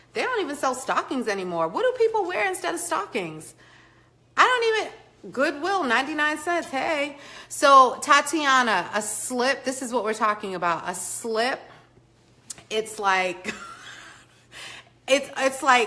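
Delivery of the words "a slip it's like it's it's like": giggly, broken-up speech, laughing through words. Explaining what a slip is to the room, laughing while talking. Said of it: "I don't know why I'm laughing".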